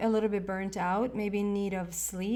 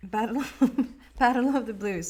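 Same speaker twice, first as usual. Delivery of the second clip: words broken up by laughter throughout; 2 semitones higher, 4 dB louder than usual. Speaker starting the next part, apologizing for laughing: laughing while talking. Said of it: "I'm sorry for laughing".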